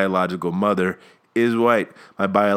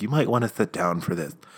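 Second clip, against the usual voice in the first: soft put-on female voice; 6 dB quieter than usual. Retelling what the orthodontist said to my mom, in a put-on female voice. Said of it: "this is the only female voice I can do".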